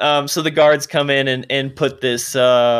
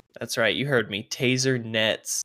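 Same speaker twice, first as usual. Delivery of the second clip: usual speaking voice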